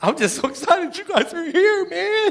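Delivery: very high, tearful, crying voice. Starting a history lesson for the audience, the speaker is already crying. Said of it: "I'm crying already".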